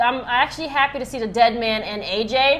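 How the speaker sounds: ordinary delivery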